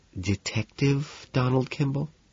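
very quiet, anxious tone. A woman repeats the visitor's name as if asking, lowered voice. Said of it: "lowers her voice".

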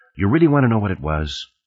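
ordinary delivery

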